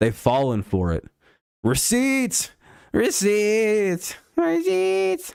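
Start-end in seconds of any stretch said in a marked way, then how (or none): 1.6-5.3 very high, hammered-out, repeated delivery. Mocking people who picked the Jets with a Gary V impersonation. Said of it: "That's my Gary V impersonate".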